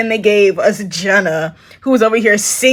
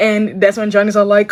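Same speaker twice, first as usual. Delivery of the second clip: plain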